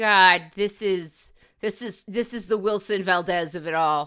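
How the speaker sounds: ordinary talk, nothing marked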